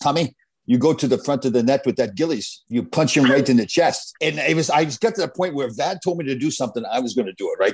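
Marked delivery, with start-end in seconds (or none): 0.0-4.1 put-on French accent. Retelling his coach's instruction before a game against the Islanders, French accent. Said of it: "in his French accent".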